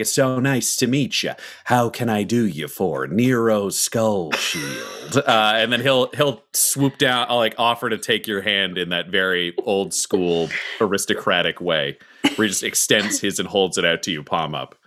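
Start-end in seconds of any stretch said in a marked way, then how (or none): 0.0-5.2 slow, smooth, charming schmoozing delivery. A character saunters over to introduce himself, McConaughey-style smooth charm. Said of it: "McConaughey and almost Magic Mike style way".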